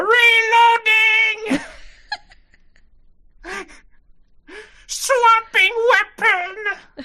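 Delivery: very high, slow, loud screaming gun voice.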